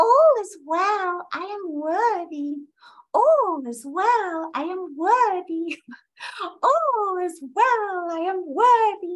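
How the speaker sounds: high, squeaky little cartoon mouse voice. Guiding listeners through repeated affirmations, say them in a Mickey Mouse voice. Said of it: "say it in your Mickey Mouse voice".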